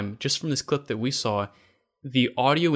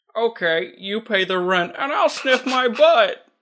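very high put-on talking-dog voice; 9 semitones higher, 4 dB louder than usual. Acting out a movie scene, answering as the dog: put-on talking dog voice. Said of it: "you're never allowed to have that voice".

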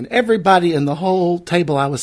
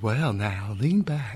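calm, soothing, soft, low ASMR delivery; 5 semitones lower, 7 dB quieter than usual. Asked for your ASMR voice, welcoming listeners to the show in a soothing ASMR voice. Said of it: "Your ASMR voice".

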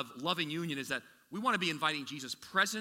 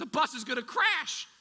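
mock, very high-pitched, shrill, loud screaming; 10 semitones higher, 5 dB louder than usual. Recounting a mother screaming at her child before a game: imitating mother screaming. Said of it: "And she's screaming at me".

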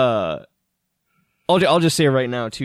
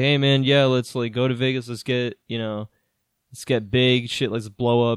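plain

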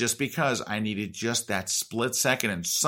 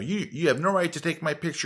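angry, pitched-up, mild half-yell; 5 semitones higher than usual. Speaker retells a stranger who went off on him, retelling a man screaming. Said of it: "He's screaming at me".

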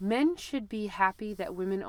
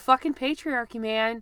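shouting, higher and louder; 4 semitones higher, 6 dB louder than usual. Cheering on a point about the patriarchy: yelling. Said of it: "I'm yelling. I'm sorry".

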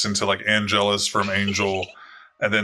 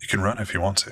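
soft, hushed half-whisper, close by into the ear; 3 dB quieter than usual. Narrating, the speaker voices Iris half-whispering into the listener's ear: Iris half-whispering. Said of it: "she whispers down into your ear".

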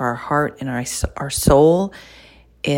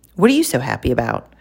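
put-on snippy, curt tone; 3 semitones lower than usual. Retelling what a stranger outside a store asked: imitating a snippy remark. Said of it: "she said it just like that, like, really snippy".

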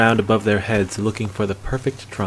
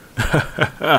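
high cackle full of laughter; 5 semitones higher than usual. A man kicking off his boot in reply to the hunter: cackling. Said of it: "Bracknell cackled".

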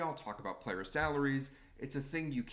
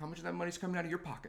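joking tone, higher, faster; 3 semitones higher than usual. Recounting an annoying argument about player salaries, the speaker repeats their own question, retelling a joking jab. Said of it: "I just sort of jokingly".

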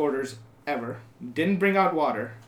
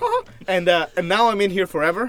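plain

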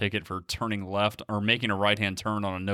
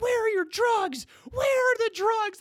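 very high, shrill screaming; 3 dB louder than usual. Recounting a cop with gun drawn demanding drugs, imitating a cop screaming. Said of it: "he's screaming like".

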